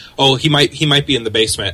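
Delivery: ordinary delivery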